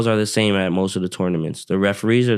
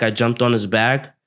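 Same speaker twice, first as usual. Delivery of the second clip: ordinary delivery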